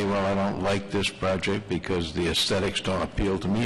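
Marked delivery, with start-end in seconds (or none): none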